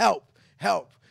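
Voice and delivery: loud, high, mock scream. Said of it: "screaming out".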